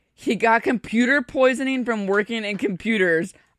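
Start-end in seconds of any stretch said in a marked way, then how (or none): none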